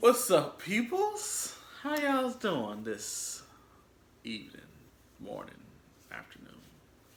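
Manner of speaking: very high, swooping country accent. Greeting viewers at the start of the video, country accent. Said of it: "You sound so country".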